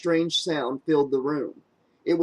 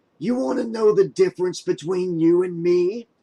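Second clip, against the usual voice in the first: growling, menacing; 3 semitones higher, 3 dB louder than usual. Narrator reading Freddie taunting the stricken Kane, growling. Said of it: "he growled".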